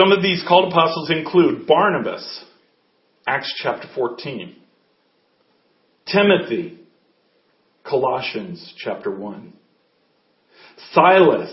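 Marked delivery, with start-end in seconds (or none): 1.7-11.5 slow, deliberate, dictation-like speech. Speaker lists names and verses so listeners can write them down, speaking slowly. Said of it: "I'll say these slow so you can write them down".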